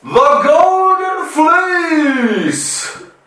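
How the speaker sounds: very high, theatrical cry, "fleece" stretched out. Asked for an example, the speaker shows how he'll say the phrase: very dramatic. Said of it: "I'm going to say it really dramatically".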